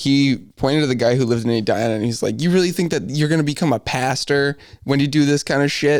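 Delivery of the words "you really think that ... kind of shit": mock yelling voice, higher. Retelling how the dean of the school chewed them out: imitating the dean yelling. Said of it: "yelling at us all".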